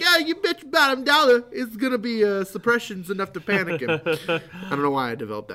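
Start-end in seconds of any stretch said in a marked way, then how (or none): 0.0-4.0 put-on Jersey accent, much higher, louder. Recalling telling everyone what the flaw card would be, in a New Jersey accent. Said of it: "New Jersey accent".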